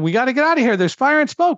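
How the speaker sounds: mock panicked, very high, rising frantic yelling. Recounting an emergency with a guide dog, quoting a companion: retelling a frantic shout. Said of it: "David kept shouting".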